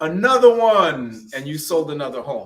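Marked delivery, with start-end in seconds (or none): 0.0-1.3 loud, booming, boastful hype-man delivery. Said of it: "in the [name] voice".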